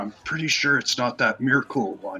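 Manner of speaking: whispering. Player's character whispers back to her while waiting to interrogate her, whispering. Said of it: "kind of try to whisper back to her".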